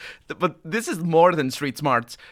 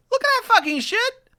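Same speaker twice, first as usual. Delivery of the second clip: piercing, shrill, rapid screech, very high; 3 dB louder than usual. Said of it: "He screeches".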